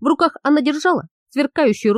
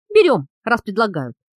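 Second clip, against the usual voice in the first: ordinary delivery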